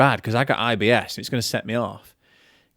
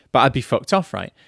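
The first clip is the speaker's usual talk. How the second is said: ordinary talk, nothing marked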